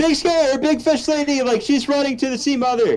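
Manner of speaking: very high yell, calling out far. Playing a character calling out to the friends, yelling to friends. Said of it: "continue yelling to the friends".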